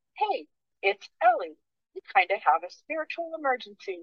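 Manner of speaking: high, soft little phone assistant voice. Speaker recounts earbuds reading out a message from Ellie, Siri voice. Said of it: "my little like Siri voice goes".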